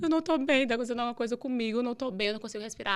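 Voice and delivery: tearful, crying, distressed, breaking down in tears. Retelling answering a friend's phone call: retelling her own past crying. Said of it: "aí já comecei a chorar".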